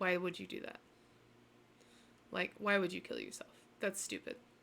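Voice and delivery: low, flat, emotionless voice. Recalling what he said when he called that night, imitating his emotionless voice. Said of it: "with the same emotionless voice that he had before".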